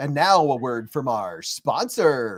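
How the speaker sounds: broadcast-style radio announcer voice. After thanks for gifted memberships, showing how to use the announcer voice. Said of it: "You got to use your announcer voice".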